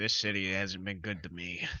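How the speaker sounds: hard-boiled film noir detective narration voice. Picturing a character as a noir detective leaning on a wall: noir detective voice. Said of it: "noir detective".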